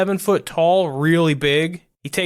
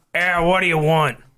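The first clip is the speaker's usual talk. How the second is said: mock grumpy game-character voice; 3 semitones higher than usual. Voicing a private investigator at a second-story window: Ray NPC voice. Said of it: "Already regretting this voice".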